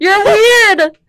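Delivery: very loud, shrill, high-pitched yell. Answering a friend who just called them weird: yelling. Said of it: "Don't yell at me".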